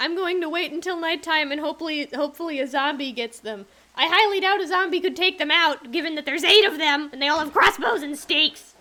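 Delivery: terrified, frightened, full voice without lowering. Unable to get away from a group chasing you; terrified, not lowering your voice. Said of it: "I'm not lowering my voice. I'm terrified".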